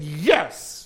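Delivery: put-out, grudging, petulant, sulky tone. Speaker retells a biblical character's reply to God: mock-petulant. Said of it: "I'm putting the petulance in".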